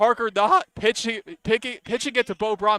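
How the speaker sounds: cracking voice, stumbling and tripping over words. Announcer calls a play with seventeen seconds left, voice cracking. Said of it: "My voice cracked".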